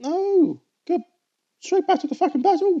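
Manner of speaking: voice shooting way up, sudden high-pitched outburst. Complaining about anime gap fillers mid-battle: voice going high. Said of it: "my voice went high then".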